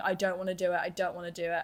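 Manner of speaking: put-on sobbing, crying girl's voice. Retelling a girl who was crying her eyes out: imitating a girl sobbing. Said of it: "There is a girl already sobbing".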